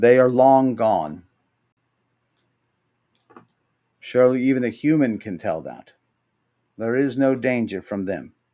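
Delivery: low, deep but feminine voice. Game master voicing a voice speaking to the players from above, deep but feminine voice. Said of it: "a voice, deep but feminine".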